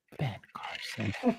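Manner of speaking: hushed, very quiet stage whisper. Listing candidates, saying one name as a joke: mock quiet voice. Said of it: "I have to say this real quietly".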